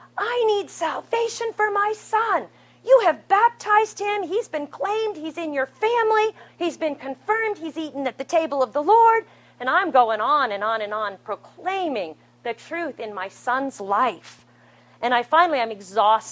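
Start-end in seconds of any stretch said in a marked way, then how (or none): 0.2-9.3 very high, pleading scream at the top of the lungs. Recounting praying for their son, the speaker replays their outburst: retelling own screaming. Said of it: "starting to scream like at the top of my lungs".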